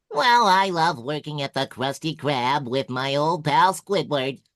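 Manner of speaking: high, loud, pitched way up cartoon voice. Asked whether the speaker can do SpongeBob, the speaker shows it off: SpongeBob voice. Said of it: "of course I can do SpongeBob".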